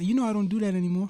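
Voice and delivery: small, high, soft little voice. Recounting Anderson's answer to a fight wager, done in his little voice. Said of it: "He got that little voice".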